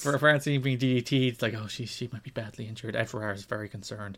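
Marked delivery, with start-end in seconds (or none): 1.5-4.2 very soft, hushed, grave, concerned tone. Retelling how wrestling commentators covered an injury: imitating hushed concerned commentary. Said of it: "hush tones".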